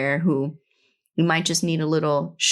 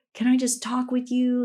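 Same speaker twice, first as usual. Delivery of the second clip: imitated tearful crying voice, higher; 7 semitones higher than usual. Retelling how a stranger asked to talk: imitating someone crying. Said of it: "crying a little bit".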